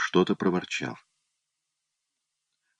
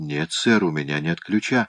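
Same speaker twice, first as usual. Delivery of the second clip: ordinary delivery, nothing marked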